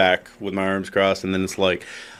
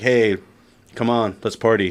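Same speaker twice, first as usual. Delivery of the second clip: ordinary talk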